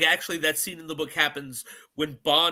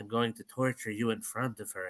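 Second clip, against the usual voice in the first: put-on menacing villain voice, lower and quieter; 6 semitones lower, 9 dB quieter than usual. Retelling a villain's threat to Bond: Peter Lorre impression. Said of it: "I just like doing my Peter Lorre impression".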